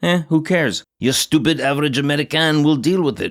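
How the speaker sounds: fake French accent, sniffy and superior. Line addressed to the stupid average American, in a put-on French accent. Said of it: "Why am I doing a French accent?".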